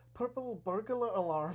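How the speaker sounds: attempted Irish accent. Asked by another speaker for their best Irish, the speaker gives an attempted Irish accent. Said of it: "Give us your best Irish".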